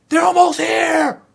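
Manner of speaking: mock, very high, ragged, rough alarmed shout. Narrating a scene, acting out the tour guide yelling: retelling a tour guide's yell. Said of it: "Tour guide yelling".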